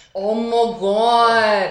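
words stretched out and drawn long. Trying a friend's catchphrase the elongated way he describes, elongated 'Oh my God'. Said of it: "elongate it".

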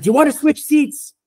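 yelling. Retelling a terrified man's question in a loud place: imitating someone yelling. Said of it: "he yells at me 'cause it's loud".

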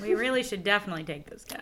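insincere, sarcastic tone. Answering someone who wants to get rid of a cat: sarcastic.

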